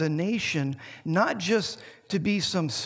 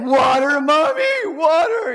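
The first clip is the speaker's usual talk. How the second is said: impassioned, pleading cry, loud and way up high; 10 semitones higher, 11 dB louder than usual. A mother retells her son's words, doing a mock passionate plea. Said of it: "in a very passionate way".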